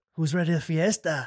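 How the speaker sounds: English with a slight fake Spanish accent. Joking about speaking Spanish: English with fake Spanish accent. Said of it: "Just English, but with an accent".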